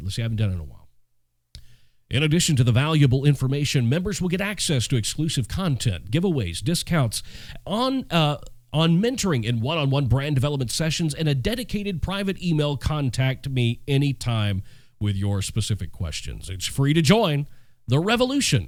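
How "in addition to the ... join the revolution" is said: put-on old radio announcer voice, on-air promo read. Speaker reads an ad the way he used to on the radio, old radio voice. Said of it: "y'all want me to do this in my old radio voice?".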